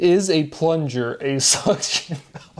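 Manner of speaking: slow speech broken up by laughter. Reading out a word association that just made them laugh: laughing while talking. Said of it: "that one made me laugh".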